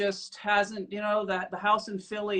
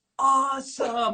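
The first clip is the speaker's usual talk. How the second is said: terse, raised, pitched-up single word; 6 semitones higher, 5 dB louder than usual. Retelling how the other speaker first reacted: Dave impression. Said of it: "you have an even better impression of, of me".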